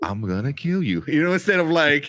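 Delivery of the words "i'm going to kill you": mock calm, flat monotone villain voice. Retelling a film villain's threat: imitating calm monotone villain. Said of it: "so calm and, and just monotone all the time".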